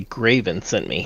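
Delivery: under the breath. Telling the group what he will say to them, said under the breath. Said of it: "and under my breath".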